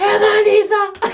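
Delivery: mock shrill, very high screaming yell. Retelling Mkhele screaming at a woman, imitating Mkhele screaming. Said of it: "he's screaming at Mandisa".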